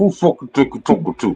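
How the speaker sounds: tight-teeth speech as if mouth full. Mocking someone's tone by doing an aunt's voice, imitating mouth full of snuff. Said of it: "her mouth full of snuff".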